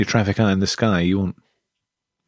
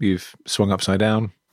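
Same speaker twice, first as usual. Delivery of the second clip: normal talking voice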